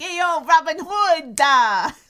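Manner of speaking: put-on loud, slow, drawn-out New Jersey accent. Recalling a movie actor's line in a New Jersey accent. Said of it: "a New Jersey accent".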